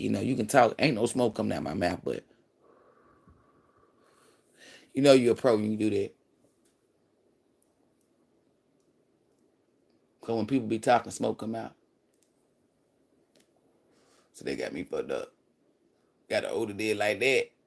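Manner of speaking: talking while holding breath. Talking to viewers before exhaling a hit: talking while holding in smoke. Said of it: "I ain't released it yet".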